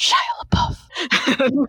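sinister, menacing whisper under the breath. Retelling how a roommate walked around muttering, mock-menacing mutter under breath. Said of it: "very menacingly under his breath".

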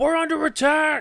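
high-pitched, shrill, alarmed yell. Voicing an unseen enemy raising the alarm in a fight: yelling. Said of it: "you hear someone yell".

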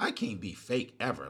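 normal talking voice

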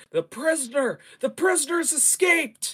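high, loud, alarmed yell.

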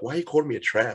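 badly done, put-on American accent. Imagining how Americans would react to a UK show, in a terrible American accent. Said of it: "that's a terrible accent".

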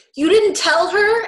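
booming, very loud, high-pitched outburst. Retelling how one character answers another, retelling a really loud reply. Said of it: "Seth really loudly is like".

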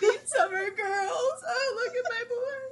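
very high, sentimental, doting mom voice. Acting as a mom watching home videos: imitating a doting mom. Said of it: "I am that mom, like, watching home videos".

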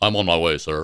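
put-on toxic character voice. Retelling a scene, the speaker answers Nick Fury's payphone call in that toxic voice. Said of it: "it's that toxic voice".

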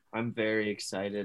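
flat, quiet monotone with zero enthusiasm. Asked on a podcast how excited he is for the baseball season, unexcited. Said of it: "you don't sound it".

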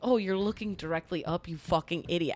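mock-mad scolding tone. Retelling scolding oneself over misreading a star app: retelling angry self-scolding. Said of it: "I was all mad".

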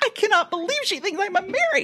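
mock very high, rushed, stunned, excited disbelief. Recalling her reaction to being thought a mary, reliving shocked disbelief. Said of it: "like in in shock and I can't believe it".

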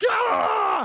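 screaming from the throat. Coaching someone's scream, the speaker demonstrates the wrong way: screaming from the throat.

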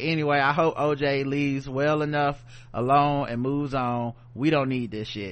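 ordinary delivery

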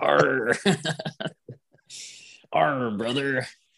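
pirate-style talk in a wrestler voice. Joking about a wrestler in a pirate outfit: pirate Hulk Hogan voice. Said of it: "Scurvy Redbeard Hulk Hogan".

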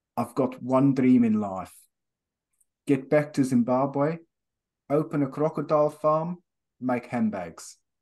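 put-on South African accent. Quoting a man who went to school in south africa: generic south african accent. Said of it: "I'll try and do his accent. It'll just be a generic South Africa".

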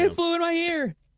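put-on high, loud screaming child voice. Telling friends about a child seen long ago, the speaker acts out the child's panicked cries. Imitating a screaming child. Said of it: "started screaming and going".

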